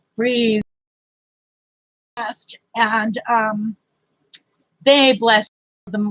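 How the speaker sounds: on the verge of crying, choking up. Thanking people who gave many things, on the verge of crying. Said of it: "I'm gonna start crying".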